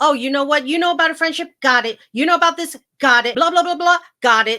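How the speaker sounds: loud, very sarcastic, cutting, cruel rant. Retelling how she went off on Dolores, imitating a very sarcastic, cruel tone. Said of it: "very, very sarcastic and cruel".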